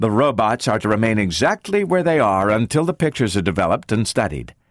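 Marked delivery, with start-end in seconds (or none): none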